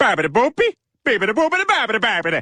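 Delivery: fake Italian-sounding gibberish. A man with a new mustache insists he can speak Italian, in fake Italian gibberish. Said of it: "Speaking Italian".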